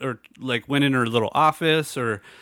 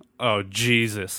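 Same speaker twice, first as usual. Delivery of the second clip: loud, exasperated, complaining exclamation, lower pitch; 3 semitones lower than usual. Retelling a complaint in a slow coffee line: imitating a loud exasperated exclamation. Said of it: "loud enough for everybody to hear".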